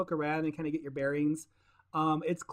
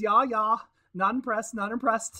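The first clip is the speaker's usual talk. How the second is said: mocking laugh, slower; 6 semitones higher, 3 dB louder than usual. A game master voices a character sizing up the adventurers, laughing at them. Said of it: "He laughs at you".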